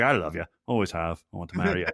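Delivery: low, sincere Scottish brogue. Retelling a film proposal scene, quoting the man's line, in a scottish brogue. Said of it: "in a Scottish brogue".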